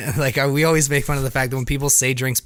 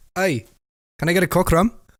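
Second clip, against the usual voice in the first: put-on Serbian accent, higher pitch; 5 semitones higher than usual. Retelling a customer's drink order at the bar: imitating a Serbian accent. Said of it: "I had a guy come up with an accent too".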